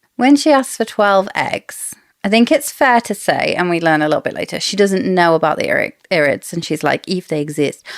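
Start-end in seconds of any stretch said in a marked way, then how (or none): 7.1-7.9 put-on South American accent. Quoting Queen Marlies from the audiobook: Queen Marlies South American accent. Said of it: "I'm doing that, like, South American accent".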